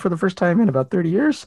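voice breaking slightly. Telling a story from 30 years ago, voice cracking. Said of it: "Your voice is cracking a little bit there".

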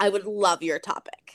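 ordinary talk, nothing marked

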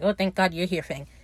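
normal talking voice

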